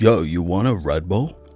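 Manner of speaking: slow, laid-back, put-on American drawl. Acting out the dastardly american after an innocent european, in an american accent. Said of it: "such a good vocal performance... plucked out the American Red Bull guy".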